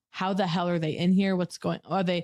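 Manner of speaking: ordinary talk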